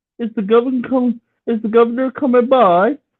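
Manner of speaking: put-on British accent. Trading attempts at accents, a speaker tries their best british accent. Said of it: "best British accent".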